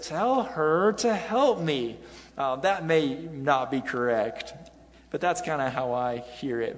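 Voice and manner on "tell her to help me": high, whiny, complaining voice. Reading a bible verse aloud in a whining, complaining tone. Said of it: "I get like a whining tone there. ... And I read it like this".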